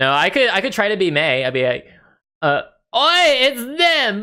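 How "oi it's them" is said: very high-pitched, squeaky, bad British accent. Speaker tries to be May, bad British accent as May. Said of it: "I'm British and I can't pronounce my R's".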